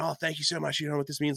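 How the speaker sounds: high-pitched, put-on Australian accent. Retelling a stranger thanking for a Tim Tam: imitating an Australian accent. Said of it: "And then I hear the accent".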